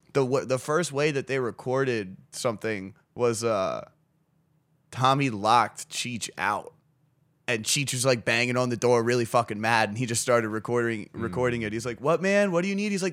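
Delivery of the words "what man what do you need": put-on stoner voice, pitched a touch high. Retelling how Tommy answered Cheech, who was locked out and banging on the door, imitating Tommy being a stoner. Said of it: "just being a fucking stoner".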